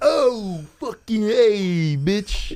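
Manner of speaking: put-on Italian Jersey accent, pitched way up. Asking why Italians always talk like this, speaker does an Italian stereotype impression. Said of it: "Why are Italians always like".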